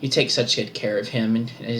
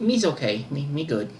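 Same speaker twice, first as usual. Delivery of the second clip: simple, brutish, beast-like creature voice; 4 semitones higher than usual. Game master voicing Sandra slips into the wrong accent, Owlbear voice. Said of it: "Wrong accent".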